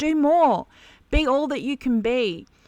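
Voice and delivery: high, loud screaming. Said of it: "it's screaming at us".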